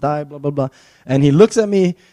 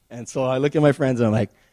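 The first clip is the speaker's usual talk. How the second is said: usual speaking voice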